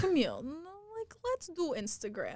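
put-on heavy Russian accent, high and swooping. Speaker quotes her fencing coach, in a heavy russian accent. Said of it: "with a really like heavy Russian accent".

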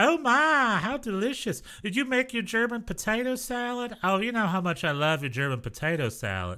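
put-on sweet, fussing old Texan lady. Retelling what old texan ladies said on a cooking show: imitating old texan ladies. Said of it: "all these old Texan ladies just being like".

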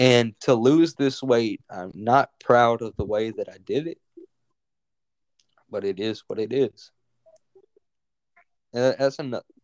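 voice catching with tears, teary and choking up. Opening up on the podcast for the first time, tearing up. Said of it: "I'm actually tearing up right now".

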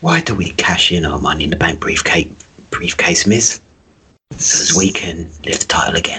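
put-on voice of an older British actor. Repeating the joke about a wrestling briefcase: Michael Caine impression. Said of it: "we started doing Michael Caine impressions".

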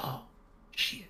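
muttered, whispered under the breath. Retelling what he whispered after ordering an ultrasound, whispered under the breath. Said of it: "did you just whisper, oh, shit, under your breath".

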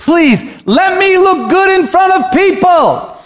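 put-on drawn-out, very high, slow, desperate begging. Retelling a bible story, acting out a character who starts begging. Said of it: "but then he's begging".

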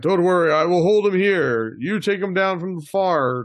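high-pitched shout. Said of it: "I will yell back".

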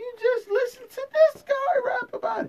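loud, high-pitched disbelief.

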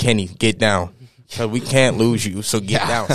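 normal talking voice

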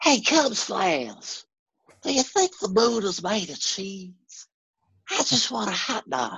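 high, swooping announcer voice with wide pitch swings. Talking about voiceover work, the speaker does Will Ferrell's Harry Caray impression. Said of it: "I can do Will Ferrell as Harry Carey".

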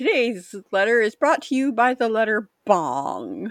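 put-on stoned talking. Describing a sketch where characters are together and stoned, imitating stoned speech. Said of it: "they're together and they're stoned".

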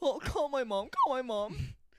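put-on very high, slow, plaintive, hurt little-kid pleading voice. Imitating a hurt kid on the playground: imitating a hurt kid. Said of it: "It's like".

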